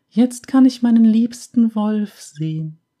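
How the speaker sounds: warbling, trilling, very high falsetto. A narrator reads Emil's reply in the story: trilling high falsetto. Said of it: "in einem trillernd hohen Falsett".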